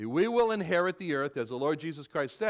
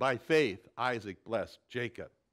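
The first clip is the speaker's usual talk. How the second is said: normal talking voice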